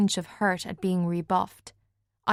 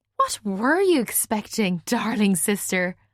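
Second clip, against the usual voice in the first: put-on drunk slurred speech. Drunk first-person narrator answering their sister's remark, drunk slurred speech. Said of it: "it came out slurred".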